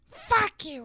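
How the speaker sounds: put-on tiny toddler baby voice, very high. Voicing a baby daughter answering her mother: voicing a baby daughter. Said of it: "I'll always respond in her voice".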